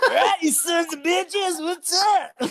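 very high, loud, very slow drawn-out holler. Acting out the other speaker standing at his camper door: imitating a friend. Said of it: "He'd be like this".

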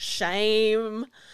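ashamed-sounding character voice. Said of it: "say that with that tone of voice".

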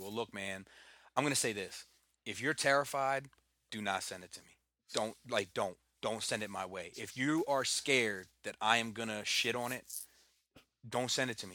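ordinary talk, nothing marked

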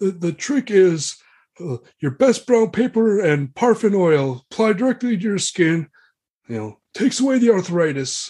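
put-on high, aged knight voice.

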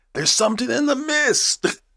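shrill shriek, very high and rising in pitch. Quoting a movie character's memorable line: imitating someone screaming. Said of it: "He's the one who screams".

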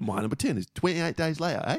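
poorly put-on English accent. Revealing a film countdown list, in a shithouse English accent. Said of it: "in an English shithouse accent".

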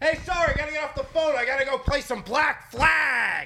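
excited, stoked shouting, very high-pitched. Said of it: "and he's yelling".

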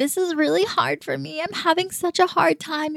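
high, forced fake crying with put-on teary sobs. Retelling how Hannah Ann forced herself to cry on a date: imitating Hannah Ann fake crying. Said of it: "forced herself to cry and be like".

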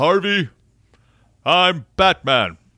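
loud high-pitched shout. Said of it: "Bruce stands up and yells".

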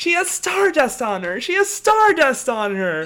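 very high, very loud, swooping, ecstatic screaming. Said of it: "she keeps screaming".

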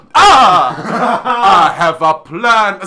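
put-on very loud, very drawn-out, booming, slow, hammy vampire accent. Retelling how the actor playing Dracula popped out of a door: imitating a Dracula accent. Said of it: "See, I can't even do it".

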